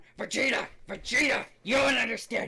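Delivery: fun, high-pitched cartoon brute warrior voice. Recalling running around VR chat with a Nappa avatar, calling out; Nappa voice. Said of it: "I used to do the Nappa voice".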